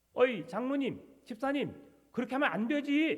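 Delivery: loud scolding yell.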